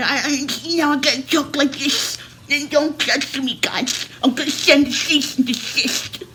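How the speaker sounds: high-pitched nerdy voice lisping every S into SH. Making fun of people's lists, doing how they talk: mocking Poindexter lisp. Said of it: "talking like Poindexter... All your S's come out S H".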